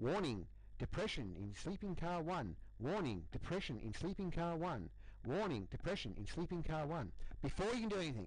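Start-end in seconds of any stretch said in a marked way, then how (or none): 0.0-7.1 computerized machine alarm voice. Narrating the moment the alarm goes off, in a computerized alarm voice. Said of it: "the computerized voice is along the lines of".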